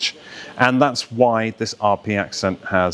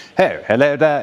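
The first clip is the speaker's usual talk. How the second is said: put-on old-time 1930s radio-style heightened RP accent; 5 semitones higher, 3 dB louder than usual. Explaining english accents, the speaker shows how they spoke on 1930s radio: heightened rp. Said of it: "they speak like this on the radio".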